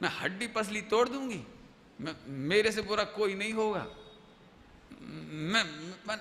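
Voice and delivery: ordinary talk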